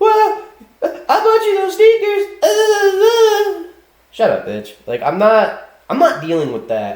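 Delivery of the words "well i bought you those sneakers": very high arguing woman voice, drawn-out "uh". Imitating a woman in an argument, claiming credit for gifts: imitating a woman arguing. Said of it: "and you're on some".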